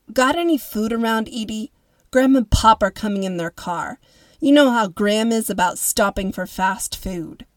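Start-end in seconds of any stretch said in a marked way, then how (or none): none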